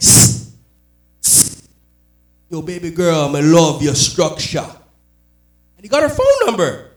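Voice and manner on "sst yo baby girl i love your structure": put-on Jamaican accent, slower. Retelling how a cousin picked up a girl, in a put-on Jamaican accent. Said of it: "suckers for Jamaican accents".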